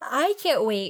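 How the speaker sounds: words stretched out by a yawn. Talking about the show's final season, the speaker says this through a yawn. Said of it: "I said that through a yawn".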